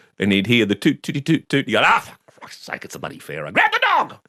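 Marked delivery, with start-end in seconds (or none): 1.8-4.1 put-on fed-up, irritated outburst, high and swooping. Retelling how father reacted to the dog's noise, imitating father's irritated outburst. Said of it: "my father got irritated with it".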